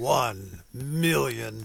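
low movie trailer announcer delivery. Radio host announces a donor challenge amount in a movie announcer voice. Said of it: "It is hard not to say that in movie announcer voice".

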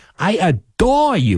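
put-on heavy Cape Cod accent. Speaker imitates his grandmother after her kisses: thick Cape Cod accent. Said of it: "with that really thick Cape Cod".

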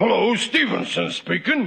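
stuffy, congested, disguised put-on voice. Showing a plan to fool Gillis on the phone: imitating Stevenson's voice. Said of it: "I imitate his voice".

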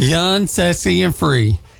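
bad country accent.

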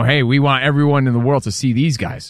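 plain

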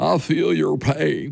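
rough, creaky, slow drawn-out politician's drawl. Trying out an impression on a co-host: Bill Clinton voice. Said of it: "Not bad".

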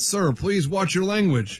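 plain

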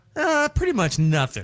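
put-on condescending assistant voice. Retelling a phone assistant's answer to a cocoa question, imitating condescending Pixel. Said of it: "she was the most condescending".

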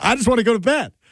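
very high, shrill yelling voice. Retelling how a dozing man yelled at the people keeping him awake: retelling a yell. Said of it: "And then he's yelling at us".

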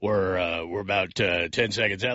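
nice, deep, low-pitched baritone radio voice. Imitating a coworker announcing the time left: imitating Andrew's deep voice. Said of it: "I can't get that deep".

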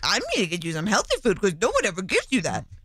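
swooping, sing-song talking-to-a-dog voice. Imitating what a mother-in-law said: talking-to-a-dog voice. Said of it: "And the voice".

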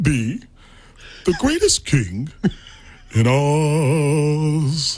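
very slow, stretched-out character drawl with Oz held long. Speaker shows friends their impressions, doing a Cowardly Lion impression. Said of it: "The Lion?".

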